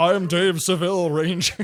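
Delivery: put-on grown man voice. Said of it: "how Zordon sounds like a grown man going".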